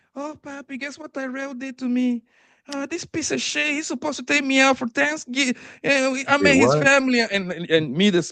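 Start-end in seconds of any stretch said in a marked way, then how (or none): 0.2-7.2 very high-pitched voice. Retelling a call where a friend complains about a date: imitating Red. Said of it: "Red gonna call me".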